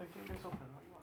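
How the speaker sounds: high, very soft coaxing tone.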